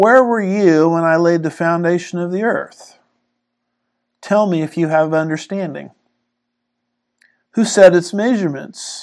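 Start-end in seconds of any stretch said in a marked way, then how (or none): none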